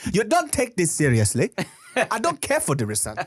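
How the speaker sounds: put-on angry, fed-up voice. Retelling a classmate who got mad at his jokes: imitating a classmate angrily scolding. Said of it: "He would get so mad".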